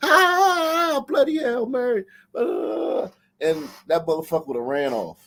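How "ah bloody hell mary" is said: mock panicked screaming. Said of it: "fell through and started screaming".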